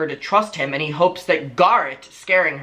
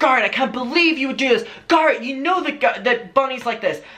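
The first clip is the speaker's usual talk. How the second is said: put-on, indignant, angry, high-pitched tone; 9 semitones higher than usual. Retelling how Shane turned on Garrett: imitating Shane being angry. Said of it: "he's angry at Garrett and being like".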